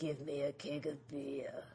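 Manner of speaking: very low, quiet, hushed demonic voice. Retelling what a figure with demon-red eyes says: deep demonic voice. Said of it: "in a deep demonic voice".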